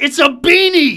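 very loud shrieking at a very high pitch. A host imagines a text from Woody Woodrum, screaming in Woody Woodrum's voice. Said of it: "I can imagine in the Woody Woodrum voice".

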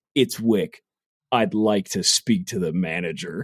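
low, painfully overdramatic action-movie line delivery. Show how he delivers every line in the second movie, imitating his movie line delivery. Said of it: "he delivers every line like that".

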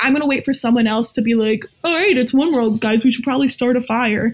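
usual speaking voice

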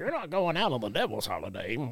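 soft, poorly done acted voice. Recalling Mom not letting the speaker go out on Halloween; bad impression of mom. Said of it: "That's a bad impression".

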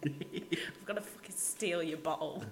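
mock soft, breathy, taunting threatening whisper.

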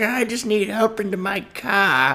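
put-on old man voice, very high, slow. Joking about a killer dressed as an old man: put-on old man voice. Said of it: "the old man gig".

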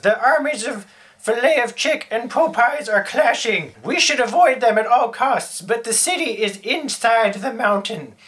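put-on high-pitched elderly woman's voice. A game master voices the rescued hermit speaking to the party, in an old lady voice. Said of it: "having rescued the Hermit [name], ... old lady".

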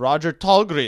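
loud, fake, put-on Swedish accent. Sharing a news story about a Swedish man, saying his name in put-on Swedish accent. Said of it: "I don't know why I did that accent".

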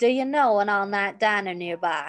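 heavy put-on Southern accent. A performer asked to try a british voice delivers the line in a very southern accent. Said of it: "That was very Southern".

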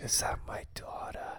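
close, hushed whisper. Repeating a movie line into the listeners' ears, whispering. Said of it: "I'm just gonna like whisper that into the ears".

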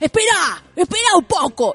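mock, high, drawn-out yelling. Retelling a man at a match yelling at his small son: imitating someone yelling at a kid. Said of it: "Le gritaba al niño".

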